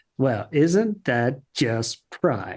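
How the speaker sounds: put-on, mock-sarcastic tone. Recapping an episode, quoting its best line: mock-sarcastic. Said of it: "he says very sarkily".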